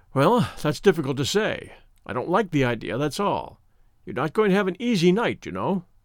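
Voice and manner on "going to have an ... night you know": ordinary delivery, nothing marked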